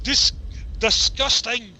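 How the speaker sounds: high put-on Scottish accent, false start on "disgusting". Asked by another speaker to say the word in a Scottish accent. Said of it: "can you say disgusting in a Scottish accent?".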